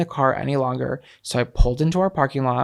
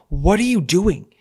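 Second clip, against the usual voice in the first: put-on, half-raised, high-pitched mild yell; 5 semitones higher than usual. Retelling rushing out of the car at a naked partner: imitating someone yelling.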